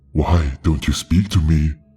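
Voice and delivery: deep, hoarse, slow, drawn-out croaking voice. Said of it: "His voice croaked, deep, hoarse, and slow".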